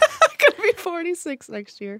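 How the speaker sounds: high, mocking imitation.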